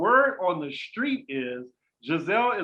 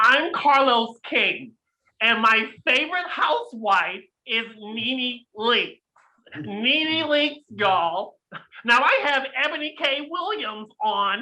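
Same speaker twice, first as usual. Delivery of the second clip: nasal, pitched-up, slow and unhurried host voice; 6 semitones higher, 4 dB louder than usual. Doing an impression of a podcast host's voice: Carlos King impression. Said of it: "let me see if I can get his voice".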